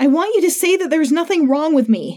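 hard, high yelled outburst. First-person narrator answering a man's questions, shouting. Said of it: "I shouted".

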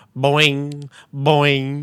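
loud, slow, drawn-out mocking boing. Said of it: "they were going".

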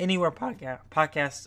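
voice breaking, cracking mid-phrase. Closing a podcast episode by listing where to follow it, voice cracking. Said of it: "I thought we were going to get through this without a voice crack".

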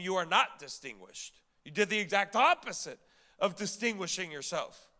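normal talking voice

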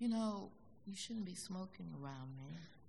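very quiet, frail, weak, feeble voice. Retelling the dying father asking the mother not to smoke, imitating a feeble voice. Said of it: "He says in a feeble voice".

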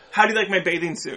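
ordinary talk

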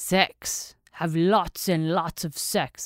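put-on Eastern European accent, thick and bad. Retelling an esthetician's answer about her skin secret, in a thick Eastern European accent. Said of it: "with this thick Eastern European accent".

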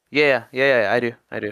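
let-down, resigned, disappointed tone. Retelling how a store employee answered: imitating a disappointed reply. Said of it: "he said it was such disappointment".

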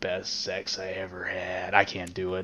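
slow, eerie, creepy, altered thrown voice. Retelling how a killer spoke to detectives walking away: imitating a creepy changed voice. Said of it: "he throws his voice like he does when he's".

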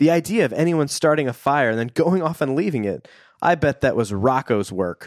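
plain

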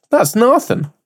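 slipping into an Irish accent, very high-pitched. Voicing an imagined doubt about making the podcast: irish accent. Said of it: "You turned Irish there for a second".

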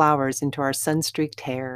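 plain reading voice

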